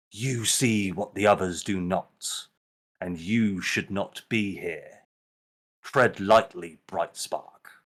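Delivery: put-on deep, harsh old woman voice. Narrating the scene, the old lady speaks to the one she grips: deep, harsh tone. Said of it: "She says in a deep, harsh tone".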